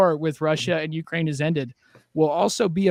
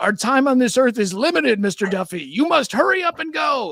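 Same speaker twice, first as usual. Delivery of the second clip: big, booming, raised voice, pitched high; 7 semitones higher than usual. Retelling how a priest called to him from behind on the way to class: big voice. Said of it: "I just hear this big voice behind me".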